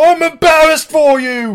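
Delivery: very loud, very high, shrill, full-on screaming rant. Performing a Gordon Ramsay rant at Rachael Ray when asked. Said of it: "what's your Rachael Ray Gordon Ramsay rant?".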